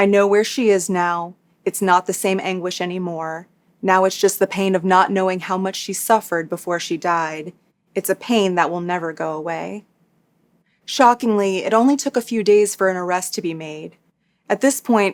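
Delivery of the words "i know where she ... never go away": plain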